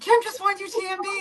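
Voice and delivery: re-enacted scream. Recalling running down the race trail announcing Kim's win, retelling a scream. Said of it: "running down the trail screaming".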